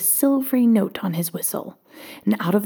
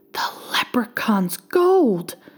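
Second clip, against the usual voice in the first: gasping, words gasped out; 2 semitones higher than usual. Reading a tale, Old Pat finds a golden harp in his bag: gasping. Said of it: "gasped Old Pat".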